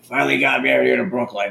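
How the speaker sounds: put-on, overdone old woman's raspy shout. Retelling a grandmother at a friend's coffin: imitating someone yelling. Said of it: "yelling at the coffin".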